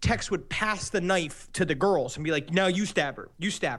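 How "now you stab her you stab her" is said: ordinary talk, nothing marked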